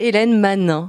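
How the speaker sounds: accent of the French south. Woman asked to say a name, saying it in a southern french accent. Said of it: "elle va me le dire dans l'accent du Sud".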